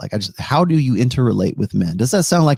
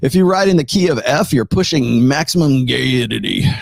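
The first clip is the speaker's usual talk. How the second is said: put-on Texas accent; 2 semitones higher than usual. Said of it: "In a Texas accent too".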